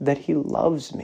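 acted tearful voice. Retelling his answer to the doctor's question, words said through tears. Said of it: "the tears started streaming down my face".

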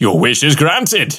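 ordinary delivery

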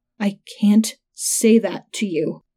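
slow, strangled, choked pleading through a tight throat. A man answers the narrator's shouted demand, pleading through a strangled, tight throat. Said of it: "Wheeler pleaded through a strangled, tight throat".

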